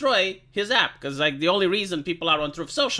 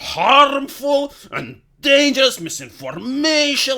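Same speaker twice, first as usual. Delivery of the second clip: loud, slow, grave dictator voice with gravitas; 7 semitones higher, 5 dB louder than usual. Showing how old dictators would speak: imitating a dictator's authoritarian voice. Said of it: "they would speak like this".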